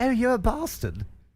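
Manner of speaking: mild English accent. Comparing American and British ways of swearing, the speaker puts on a gentle British accent. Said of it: "it's so gentle when you say".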